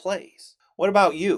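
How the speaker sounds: ordinary delivery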